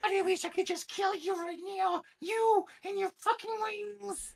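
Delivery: shrillest possible, very high shriek. Speaker imitates a frustrated man's outburst, imitating a shrill voice. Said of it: "just the shrillest voice that you can think of".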